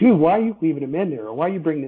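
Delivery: mock exasperated, frustrated, half-screaming outburst. Retelling watching replays and arguing with the manager: imitating own past near-screaming. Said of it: "I would almost be screaming at my manager".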